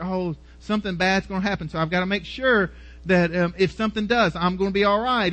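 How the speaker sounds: plain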